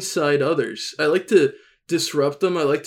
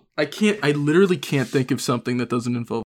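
ordinary talk, nothing marked

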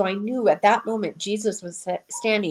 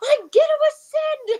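put-on very high squealing with excitement; 3 dB louder than usual. Recounting a moving moment when the speaker jumped up, acting out past excitement. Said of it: "I was like so excited".

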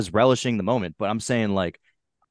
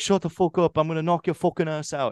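threatening fighter-style trash talk, pitched up; 7 semitones higher than usual. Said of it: "he's like".

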